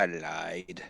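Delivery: put-on half-whisper, lied drawn out. Speaking in character into a dead man's ear: half-whispering in character. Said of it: "I lean in and I whisper in his ear".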